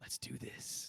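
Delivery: voiceless whisper. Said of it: "And he goes".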